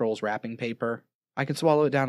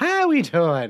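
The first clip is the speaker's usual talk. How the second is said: badly done put-on Irish accent, loud and high; 5 semitones higher, 5 dB louder than usual. A podcast co-host, introduced by the host, greets listeners in a bad Irish accent. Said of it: "why the Irish accent?".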